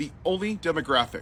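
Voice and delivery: plain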